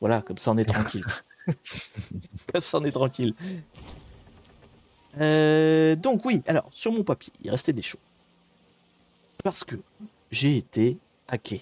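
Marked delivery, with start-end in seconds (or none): 2.5-3.3 words spoken through laughter. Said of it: "repeated punchline with laugh".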